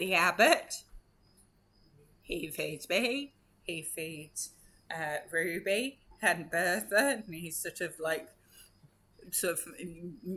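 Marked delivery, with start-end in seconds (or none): 0.0-7.2 slow talking goat voice. Voicing a goat tethered to a post, answering a player: goat voice. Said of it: "Best goat voice".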